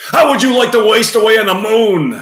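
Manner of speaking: very high, upset outburst with the word moon stretched. Performing scene two, shaking a fist, as an upset Jackie Gleason impression. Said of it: "Jackie Gleason upset".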